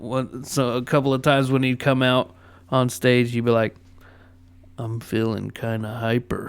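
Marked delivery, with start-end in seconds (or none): 4.8-6.5 dead flat, unvarying, one-note deadpan monotone. Quoting a stand-up comic's onstage line: Steven Wright monotone. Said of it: "ironically, with that monotone voice".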